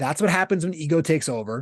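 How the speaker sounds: ordinary talk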